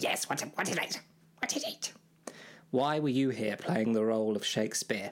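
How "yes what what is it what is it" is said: high, swooping fairy-tale imp voice. Answering when called over as Shakespeare: Rumpelstiltskin voice. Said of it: "sounded a lot like Rumpelstiltskin".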